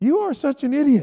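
high-pitched woman's voice. Retelling the Bible story, acting out the wife's reply: imitating Hannah. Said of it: "She's like".

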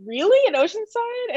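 incredulous laugh, pitched very high. Author recalling friends' news about their hometown, retelling their own laughing reply. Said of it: "I was like laughing".

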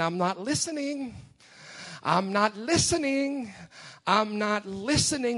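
imitated Yiddish accent. Retelling a film scene to a church congregation: Miracle Max Yiddish accent. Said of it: "in his best Yiddish accent".

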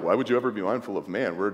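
scornful, disgusted, rushed tone. Showing the wrong way to read the question, in a disgusted tone. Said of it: "not saying it in a disgusted tone".

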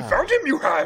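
high sage voice. Joking with others about the last movie, in a Yoda voice. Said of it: "like a Yoda voice".

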